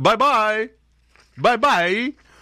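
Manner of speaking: high, slow, fake Chinese accent.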